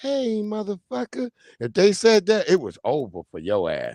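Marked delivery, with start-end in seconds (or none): 0.0-1.3 put-on soft menacing voice, quieter. Speaker acting out a soft-spoken tough guy, imitating soft menacing voice.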